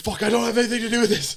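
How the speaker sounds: put-on, high, loud, panicked, freaked-out blurt. Retelling their own thoughts during the incident: retelling own freaking out. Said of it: "I'm freaking out 'cause I'm like".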